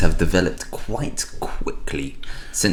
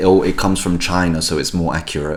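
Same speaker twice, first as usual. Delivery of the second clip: ordinary delivery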